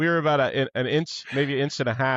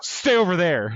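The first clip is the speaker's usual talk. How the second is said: put-on nasty, cutting, mean and harsh voice; 4 semitones higher than usual. Retelling grabbing someone as the boat nearly sank, retelling a mean shout. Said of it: "And I said it so mean".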